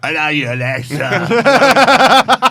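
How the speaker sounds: slow, loud, over-the-top Cockney accent.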